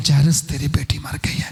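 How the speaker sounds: soft, muffled, held-down, hushed voice. Retelling how someone told Jairus his daughter had died: hushed, subdued voice. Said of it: "बड़े धीमी आवाज से, दबी हुई आवाज से ... ऐसी ही आवाज में जैरस के साथ बात की गई".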